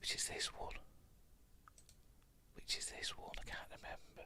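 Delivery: whispered, very quiet, barely above a breath. Trying to recall which episode comes next: whispering. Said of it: "What am I whispering for?".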